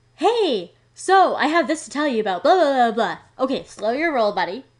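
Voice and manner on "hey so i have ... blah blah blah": eager salesy patter, loud and high. Explaining when they hang up the phone, the speaker mimics a caller in a salesperson voice. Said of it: "hear a sales voice".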